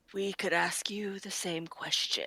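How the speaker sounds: angry, pointed, soft, quiet tone. Speaker swinging back into the voice for Visca, in an angry Visca voice. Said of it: "Think angry".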